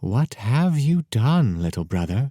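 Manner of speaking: hissed, snake-like, sibilant voice. Reading a story, the snake speaks to her little brother, hissing. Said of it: "hissed the snake".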